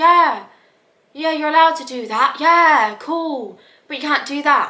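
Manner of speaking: slow, dry, flat deadpan monotone. Imitating dry English comedians: imitating a flat monotone delivery. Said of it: "monotone and flat".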